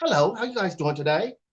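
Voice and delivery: put-on British accent. Speaker imitating how a woman talks in a room of rich men, put-on British accent. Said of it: "should damn near have a British accent".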